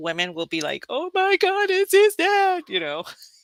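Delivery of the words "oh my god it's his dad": acted, very high, drawn-out tearful sob-talk.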